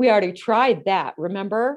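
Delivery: dripping contempt and sarcasm, scornful tone. Giving an example of contempt toward a partner, sarcastic tone. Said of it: "say in a sarcastic tone of voice".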